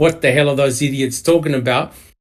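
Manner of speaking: ordinary talk, nothing marked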